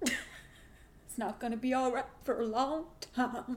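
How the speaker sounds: measured, slow, deliberate, each word dragged out. Imitating a reality show housewife's line: imitating Erica Jane's voice. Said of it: "Is that how she talks?".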